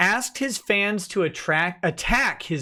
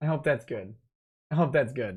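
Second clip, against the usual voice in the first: ordinary delivery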